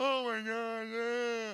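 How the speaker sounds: put-on very slow, high, hard-crying sobbing voice. Retelling looking in the mirror during a hard cry: imitating his own crying. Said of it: "it's that kind of cry".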